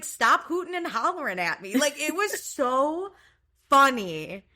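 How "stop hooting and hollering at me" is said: acted, totally unfazed, cool, unbothered tone. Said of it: "I love an unbothered queen".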